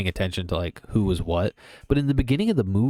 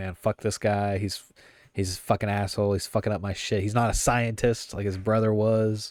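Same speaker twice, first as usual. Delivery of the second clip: normal talking voice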